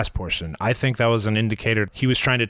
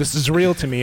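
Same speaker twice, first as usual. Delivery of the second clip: put-on mock crying, higher pitch; 4 semitones higher than usual. Retelling a video of a wrestling fan, you quote him, imitating a crying wrestling fan. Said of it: "and he's crying".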